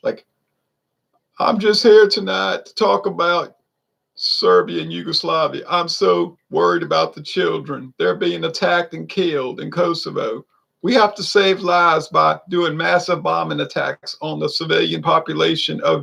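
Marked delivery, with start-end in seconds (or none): 1.4-16.0 put-on stilted, creaky, affected politician voice. Imitating how politicians talk in speeches: imitating an affected politician. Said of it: "affected thing".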